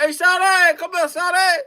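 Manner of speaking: high, hollered delivery. Retelling how guys his age called out to women, imitating guys hollering. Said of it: "they just hollered".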